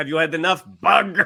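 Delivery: put-on Russian accent, laid on thick and heavy. Quoting a show's villains calling Spider-Man Bug: imitating thick Russian accent. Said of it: "that thick Russian accent".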